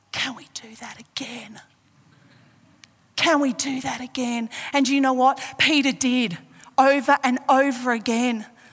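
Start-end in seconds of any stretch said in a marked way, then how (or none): 0.1-4.5 quiet half-whispered voice. Imagining Peter's words as Jesus grabs his hand: acting out a half-whisper. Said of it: "Peter whispers to him".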